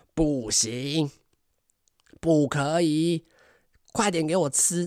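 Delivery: furious, angry, roaring yell. Retelling how a mother upstairs yelled at her child, imitating a mother's shout. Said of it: "而且是大吼".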